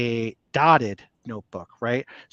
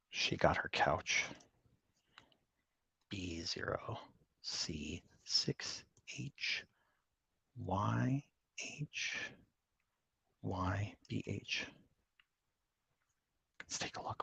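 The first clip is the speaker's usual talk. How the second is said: slow, drawn-out, barely audible whisper; 5 semitones lower, 17 dB quieter than usual. Reading out a product code while someone is on the phone: whispering. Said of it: "We're whispering 'cause Lori's on the phone".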